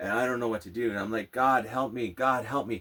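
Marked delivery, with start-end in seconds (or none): 1.3-2.8 acted, tearful, desperate voice. Retelling crying curled up on the floor: re-enacting a tearful plea. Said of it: "just crying".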